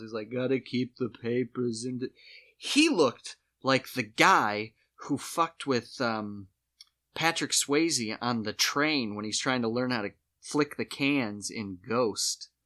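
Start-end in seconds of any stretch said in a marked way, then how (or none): 0.3-2.1 dry, droll, dazed, spaced-out voice. Retelling what a pharmacist said while rolling the receipt: imitating a droll, drugged-out pharmacist. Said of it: "more droll and it was more like he got into some pills".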